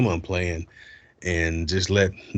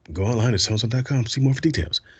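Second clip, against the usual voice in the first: rushed, rapid-fire, ad fine-print style delivery; 4 semitones higher than usual. Speaker demonstrates the end of a commercial: fast commercial disclaimer. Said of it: "the guy's like talking real fast".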